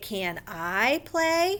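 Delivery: pitch rises on "I play". Showing how questions are asked in a lesson, rise on I play. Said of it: "We might raise the last two words so that people know we're asking a question".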